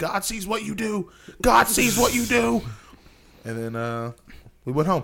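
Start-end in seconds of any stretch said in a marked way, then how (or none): 0.0-2.6 very high, loud, repeated hollering. Retelling what a man kept yelling while hitting the car: imitating someone yelling. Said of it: "and keeps yelling".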